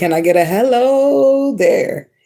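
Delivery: high voice with a long drawn-out hello. Retelling a catchphrase someone says in videos: imitating Ralph Smart. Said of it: "and he'd be like".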